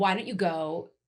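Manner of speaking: normal talking voice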